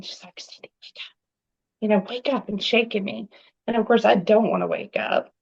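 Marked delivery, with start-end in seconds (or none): 0.0-2.5 hushed whisper, under the breath. Retelling how a sister woke them at night: imitating sister whispering. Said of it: "and she's whispering".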